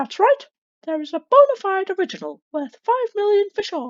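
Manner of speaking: high squeaky voice with big pitch swoops. Voicing a character, trying out a Mickey Mouse voice. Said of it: "a Mickey Mouse voice?".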